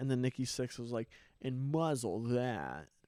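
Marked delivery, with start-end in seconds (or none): 1.4-2.8 put-on obnoxious, douchey tone. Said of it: "I said it more in, like, a douchey way".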